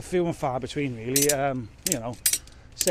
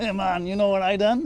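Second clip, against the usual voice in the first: put-on Jamaican accent, pitched up; 7 semitones higher, 4 dB louder than usual. Imitating the boss on a phone call: put-on Rastafarian Jamaican accent. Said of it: "doing a Rastafarian Jamaican accent".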